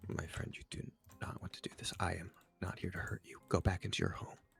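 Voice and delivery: hushed, near-whispered voice. Playing Adam in a tabletop game, both hands raised, in a hushed voice. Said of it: "in a hushed voice".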